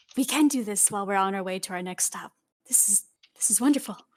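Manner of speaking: whispered with excitement. Kiori gets excited and pulls on Deshawn, excited whisper. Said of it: "whispers like".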